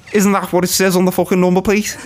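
put-on Liverpool Scouse accent. In character, arguing with someone about their stolen number plate, in a scouse accent. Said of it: "I'm in character with Scouse".

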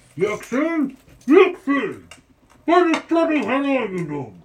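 high, swooping, exasperated call from far off. Narrator voicing someone heard calling in the courtyard, calling out from afar. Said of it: "Again, you hear".

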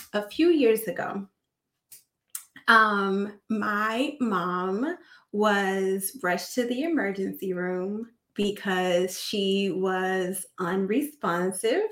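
very slow, fighting off crying, holding back tears. Telling a personal story you fear will make you emotional, holding back tears. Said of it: "I'm talking like this because I don't want to cry".

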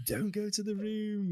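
very high-pitched yelled outburst. Retelling yelling at the TV while watching a film: retelling a yell. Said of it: "yelling at my T V".

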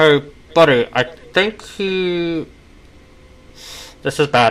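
fire-demon voice with long, drawn-out "he". Narrating a tabletop scene, the speaker voices Calcifer heard from inside. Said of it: "I had to do Calcifer's voice".

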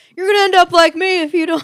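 shrill, very high, full-throated loud yelling. Retelling a prank episode where Sal yells at elderly residents: imitating Sal yelling. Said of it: "and he's yelling at him".

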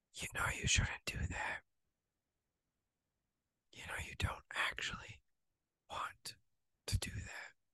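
very quiet, barely audible whisper. Acting out the quiet inner voice warning against temptation: whispering quiet voice. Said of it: "this one is just gonna whisper".

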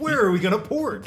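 high, loud, baffled, full of disbelief. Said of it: "You're like".

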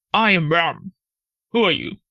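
rough, gruff-voiced delivery like a ram. Reading a fable, the narrator voices the ram answering the tiger in a gruff voice. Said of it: "in his gruff voice and striking his breast".

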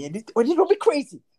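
put-on Canadian accent.

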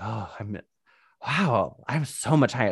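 put-on, drawn-out, stoned-sounding delivery. Retelling a date where she faked being too high: imitating herself pretending to be high. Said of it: "kind of pretending like".

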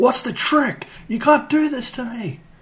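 play-acted very high, unhinged screaming meltdown. Recounting a man's breakdown in front of tour staff, retelling someone screaming. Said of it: "he's like screaming at them like".

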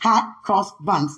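slow, careful, deliberate, word-by-word delivery. Making sure it's said right, slow, careful 'hot cross buns'. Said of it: "I got to say it slow".

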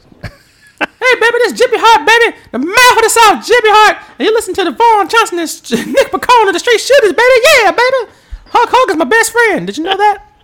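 shrill, very loud hype, screamed high at full blast. Asked to do Jimmy Hart introducing the Straight Shooters, doing a Jimmy Hart impression. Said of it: "Could you do a Jimmy Hart introducing".

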